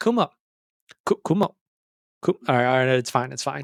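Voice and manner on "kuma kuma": failed, bad put-on Indian accent, pitched up. Retelling walking in and greeting someone by first name, failed indian accent impression. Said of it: "I can't do an Indian accent".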